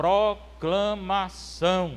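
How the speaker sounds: very slow proclaiming, every syllable stretched out. Showing how the word of God is proclaimed, not read: very slow and loud. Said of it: "eu falo bem alto. E no começo eu digo bem devagar".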